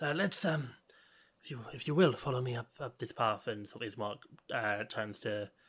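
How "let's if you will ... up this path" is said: hoarse, ragged character voice. Game master voicing Ismark speaking to the party, hoarse and ragged. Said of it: "his voice is hoarse and ragged".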